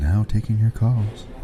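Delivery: slow, loud, mock radio host voice.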